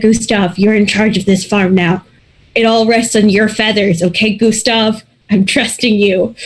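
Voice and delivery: ordinary talk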